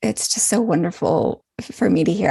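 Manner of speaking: normal talking voice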